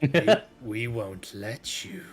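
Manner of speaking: cackling voice. Voicing the first of three figures confronting the party: cackling voice. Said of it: "cackling of three different voices".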